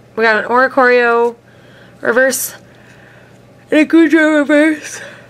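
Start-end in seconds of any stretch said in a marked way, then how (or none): 3.7-5.0 talking right through a yawn, pitch rising. Late after work, listing the cards pulled from packs, yawning. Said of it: "Excuse me, I'm yawning".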